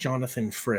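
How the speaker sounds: ordinary talk, nothing marked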